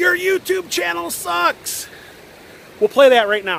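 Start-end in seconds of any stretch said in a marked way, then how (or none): 0.0-1.9 high, slow yelling. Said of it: "he yelled out".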